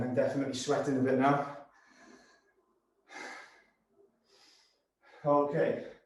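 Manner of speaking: talking while breathing hard and heavily. Counting down rounds while leading a workout, heavy breathing while talking. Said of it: "Apologies for the heavy breathing".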